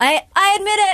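mock yelling, giving-in tone. Recalling the moment of finally admitting to being an alcoholic, retelling a yell. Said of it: "I'm yelling".

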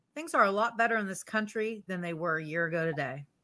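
usual speaking voice

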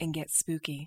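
low, hushed, sultry, spooky-sounding voice. A co-host lowering their voice before scary stories, in a lowered spooky voice. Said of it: "That sounded sexy".

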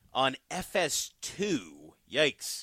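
saying it with distaste. Giving a game's time and channel on a sports show, distasteful tone. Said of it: "you said FS2 with like a bad taste in your mouth".

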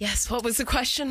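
breathless, panting, winded delivery. Arriving after sprinting over to answer the question: out of breath. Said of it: "I'm so out of breath".

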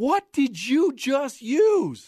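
very high-pitched yell, sounding distant. Telling a golf story, the speaker quotes another golfer shouting from the hole: retelling a yell. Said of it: "Sandy yells back".

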